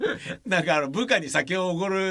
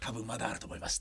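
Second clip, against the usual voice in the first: put-on small, hushed voice, quieter, lower; 7 semitones lower, 14 dB quieter than usual. Speaker retelling what someone at Yamada Denki told them, in a small, hushed voice. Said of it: "小声で言ってくれて".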